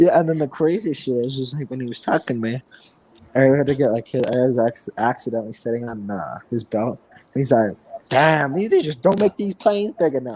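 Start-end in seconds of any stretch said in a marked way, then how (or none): 8.1-10.4 put-on Cuban accent, pitched up. Retelling what a man on a plane said to them, in a cuban accent. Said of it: "he was having like this Cuban accent".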